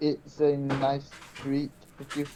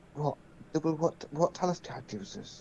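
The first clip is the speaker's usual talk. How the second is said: hushed whisper; 7 dB quieter than usual. In a role-play scene, leaning forward to reply, whispering. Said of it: "just whisper back and go".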